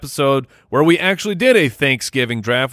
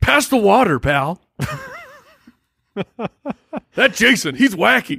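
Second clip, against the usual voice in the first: slow, swooping, sing-song voice with swinging pitch; 9 semitones higher than usual. Riffing on teenagers at a desert party: Harry Caray impression. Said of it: "kinda sounded like Harry Carey".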